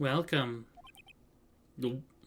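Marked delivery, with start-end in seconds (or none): 0.0-0.6 eerie voice, quieter. Voicing a character who greets the visitors: creepy voice. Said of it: "Talk about a creepy voice".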